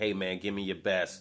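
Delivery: ordinary talk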